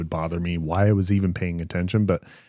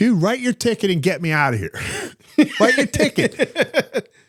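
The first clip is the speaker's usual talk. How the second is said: very high-pitched, furious, angry voice; 3 dB louder than usual. Retelling how they chewed out the man writing their ticket, retelling angrily chewing someone out. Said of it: "I just started like chewing him out".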